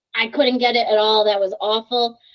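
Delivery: normal talking voice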